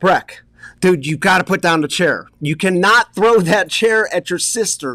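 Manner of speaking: mild, half-shouted calling out. Retelling telling a child to put down a chair: imitating own yell. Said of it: "I'm yelling at Breck".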